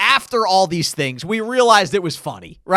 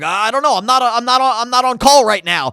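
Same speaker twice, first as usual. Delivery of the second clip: acted-out flustered, panicky voice, tripping over the words; 4 semitones higher than usual. Retelling how a friend called over to help was panicking: imitating Kenny panicking. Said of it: "and he's, like, panicking".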